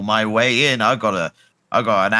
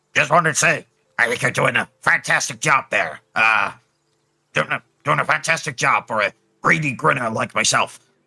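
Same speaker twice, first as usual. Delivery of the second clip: put-on goblin character voice; 4 semitones higher than usual. In a tabletop game, a goblin looks up at the ogre and speaks, goblin voice. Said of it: "doing my best goblin impression".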